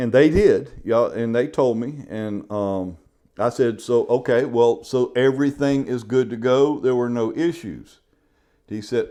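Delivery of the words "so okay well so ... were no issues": ordinary talk, nothing marked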